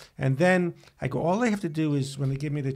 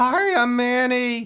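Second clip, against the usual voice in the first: put-on raised, high-pitched children's cartoon character voice; 9 semitones higher, 6 dB louder than usual. Retelling a line from Handy Manny in the voice a character did. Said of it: "That was the voice he did".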